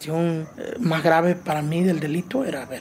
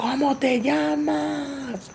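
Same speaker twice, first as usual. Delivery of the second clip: mock very high, far-carrying call, llamas drawn out; 9 semitones higher than usual. Recalling a man shouting after her as she walked down the hallway: retelling a shout. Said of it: "escuchaba que él gritaba".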